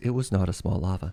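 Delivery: broadcast-style announcer voice, narrating. Joking about a lava pool that was not small: announcer's voice. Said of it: "announcer's voice".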